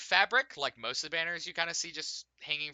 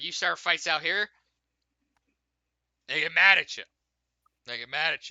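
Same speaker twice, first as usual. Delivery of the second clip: put-on loud, very drunk man's voice; 2 semitones higher, 6 dB louder than usual. Retelling what a very drunk man at the gate said about fights: imitating a very drunk man. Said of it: "he's very drunk".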